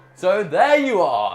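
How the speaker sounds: grand, very loud, slow, flourished finish. Trying the ending again when asked: ending with more flourish. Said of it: "That's better".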